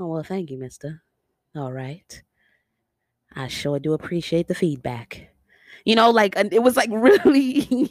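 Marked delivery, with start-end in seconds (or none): 0.0-5.3 relaxed, easygoing, mellow and soft delivery. Acting out how a woman delivered her line, imitating her mellow delivery. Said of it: "she's very mellow in the way she delivers her line".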